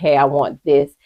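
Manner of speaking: plain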